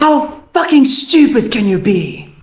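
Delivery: angry put-on voice. Recording a requested line in the character's current voice, angry Moss voice. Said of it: "Angry Moss".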